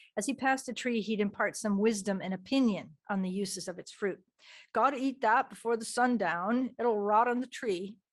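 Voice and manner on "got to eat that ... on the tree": bad, weak put-on Maine accent. Quoting the man as he named each orchard tree, in a bad Maine accent. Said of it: "I don't do the Maine accent very well".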